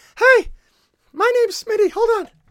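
very high, loud, squeaky little voice. Smitty introduces himself while joking about puberty since a 2018 video, talking like Mickey Mouse. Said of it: "I talk like Mickey Mouse".

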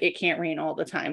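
ordinary talk, nothing marked

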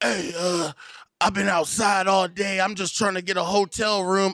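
put-on slow, long-winded, drawn-out drunk pleading voice. Imitating a drunk asking for money: mock drunk voice. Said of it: "a drunk motherfucker be like".

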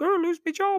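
very high, squeaky, small high-pitched voice. Imitating a short bald man from a famous clip, really high-pitched voice. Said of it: "he's really high pitched voice. He's like".

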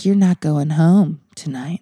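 put-on sultry voice. Retelling what the woman who swabbed her said, imitating a sultry voice. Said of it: "she said it with that sultry voice".

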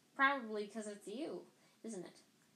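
ordinary delivery, nothing marked

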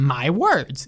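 slow, deliberate, self-important speech, each word set apart. Imitating an annoying man who talks like delivering a speech: imitating slow, deliberate speechmaking. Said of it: "He talks so slowly and deliberately".

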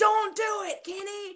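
put-on, very high shouted cry. Recounting a drive-thru moment, the speaker imitates mom, retelling mom's shout. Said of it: "puts her hands over her mouth and shouts".

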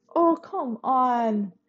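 trembling, wavering voice. [name] answers Sasha's outburst, her voice shaking. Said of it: "her voice shaking".

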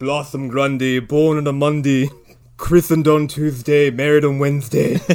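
put-on stately butler voice. Retelling a scene where the butler walks in: imitating the butler. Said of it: "he's like".

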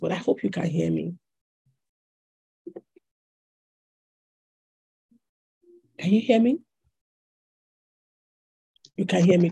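weak, strained voice, unable to project. Speaker whose voice is struggling checks the audience can hear, struggling to project. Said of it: "I can't seem to be able to project my voice".

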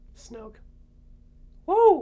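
voice cracking. Speaker answering a co-host's question, voice cracking. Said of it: "Voice crack".

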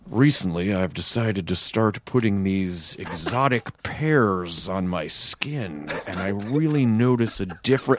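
very low, deep, slow, unhurried deadpan. Showing how he makes anything sound interesting, Offerman impression. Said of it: "it's a really good Offerman".

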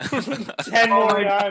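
slow, drawn-out, laughing mock despair.

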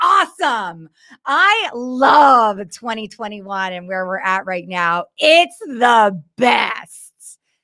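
low, ironic, sarcastic tone. Show host wrapping up a rant, sarcastic. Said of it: "And that was sarcasm".

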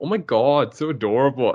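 put-on, drawn-out New York accent. Quoting a woman reacting to a lizard picture, in a New York-style voice. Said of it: "she's like totally like New York kind of style voice for her".

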